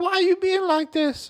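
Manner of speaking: put-on very high drunken voice. Retelling a wrong-number call, imitating a drunk girl. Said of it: "this obvious fucking drunk girl".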